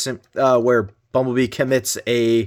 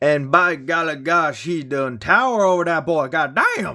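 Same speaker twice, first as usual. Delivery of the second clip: clumsy, bad put-on Louisiana accent; 4 semitones higher than usual. Comparing two Megatrons, the speaker says this in a bad Gambit Cajun accent. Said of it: "I apologize for the bad accent".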